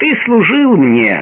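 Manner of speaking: firm, dignified tone. Narrator reads Laban answering Jacob's protest over Rachel, firm and dignified. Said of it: "ответил Лаван с твердостью и достоинством".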